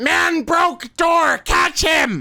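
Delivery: very high, loud, shrill shrieking scream. Playing a character who screams for someone to catch the runner: screaming.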